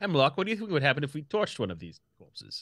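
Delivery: put-on British accent. Speaking in character to a companion, mimicking a player's British accent. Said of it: "I'm now mimicking your accent".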